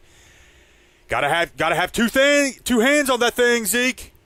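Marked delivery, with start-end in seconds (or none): 1.1-4.1 loud high-pitched fan shout. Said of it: "they will yell at them like".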